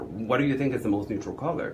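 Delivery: plain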